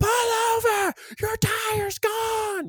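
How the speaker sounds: very high, overstretched, long drawn-out scream. Retelling a wife's phone call about a blown tire: imitating someone screaming. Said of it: "my wife screaming into the phone".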